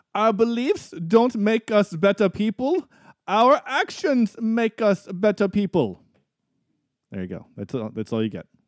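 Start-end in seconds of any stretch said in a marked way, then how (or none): 0.2-6.0 slow, deliberate, high-pitched put-on German accent. Reading a movie quote aloud for a guessing game: put-on German accent. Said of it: "How was my accent?".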